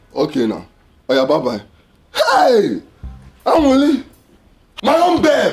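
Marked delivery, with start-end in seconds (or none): 2.1-5.5 slow hollering shout, words stretched out. In a scene, a character shouts until another tells them to calm down. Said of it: "Guy, calm down".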